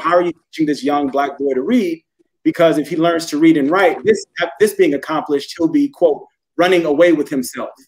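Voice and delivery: ordinary talk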